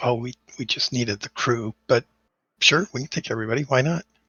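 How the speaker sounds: hushed, half-whispered aside. Voicing a character who half-whispers to a player in a story game, half-whispering. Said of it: "she whispers to you and says".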